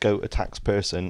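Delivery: ordinary talk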